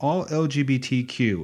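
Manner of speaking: plain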